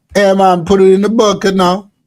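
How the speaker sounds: put-on Jamaican accent. Acting out a skit as an airport security worker: put-on jamaican accent. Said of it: "my accent is slightly racist to Jamaican".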